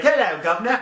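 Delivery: over-the-top British accent. Speaker urging the other to try an accent, in an exaggerated British accent. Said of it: "even exaggerated".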